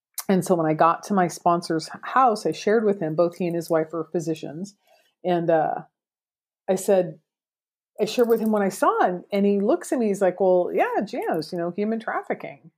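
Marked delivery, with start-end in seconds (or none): 10.4-12.6 super nonchalant, casual, offhand shrugging tone. Retelling a sponsor's reply about human trafficking, imitating someone super nonchalant. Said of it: "just super nonchalant about it".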